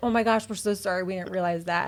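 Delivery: normal talking voice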